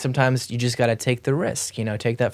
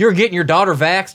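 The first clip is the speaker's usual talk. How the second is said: put-on Southern American accent, raised; 7 semitones higher, 7 dB louder than usual. Mocking people opposed to vaccines: imitating a Southern accent. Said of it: "Southern accent".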